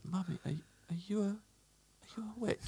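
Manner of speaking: put-on quivering voice. Retelling reading a book with mummy, speaker does a put-on quivering voice. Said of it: "in a quivering voice went".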